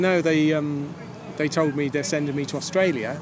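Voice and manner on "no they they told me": ordinary delivery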